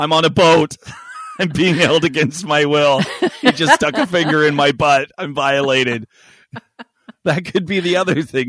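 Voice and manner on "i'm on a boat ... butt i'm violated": loud mock panicked dog voice. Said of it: "She's saying".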